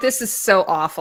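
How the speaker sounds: ordinary talk, nothing marked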